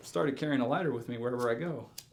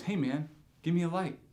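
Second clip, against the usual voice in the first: sure, direct, blunt, pitched up, no hedging; 5 semitones higher than usual. Retelling a stranger's ask for a light: imitating a convinced, blunt request. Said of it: "the way he said it wasn't like".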